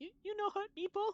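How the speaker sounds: very high-pitched, tearful, teary voice. Voicing the kobold Meepo as he looks up and asks the party: tearful Meepo voice. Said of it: "he has like tears in his eyes".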